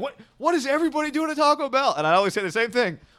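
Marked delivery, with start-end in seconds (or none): 0.0-1.9 mock angry fuming outburst, very high pitch. Retelling how a friend complained about the line: imitating an angry friend. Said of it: "he'd be, like, really angry".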